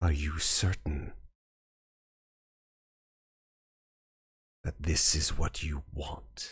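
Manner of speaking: gravelly, bottom-of-the-range basso profundo voice. Voicing a mysterious being offering resurrection: basso profundo gravelly voice. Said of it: "a voice mingled with this basso profundo gravel".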